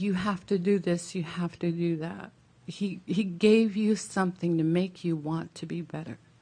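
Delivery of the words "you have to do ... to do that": ordinary talk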